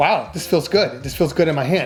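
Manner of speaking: normal talking voice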